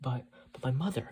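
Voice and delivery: ordinary delivery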